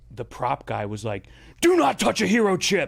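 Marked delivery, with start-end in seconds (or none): 1.6-2.9 acted out loud, high-pitched scream. Retelling how the prop guy on a commercial set screamed: imitating someone screaming. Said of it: "screamed at the do-".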